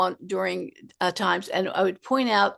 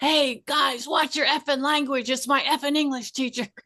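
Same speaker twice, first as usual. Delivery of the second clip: put-on child voice yelling, higher; 6 semitones higher than usual. Retelling what a kid yelled on the first night: imitating a kid yelling. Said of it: "this kid yelled".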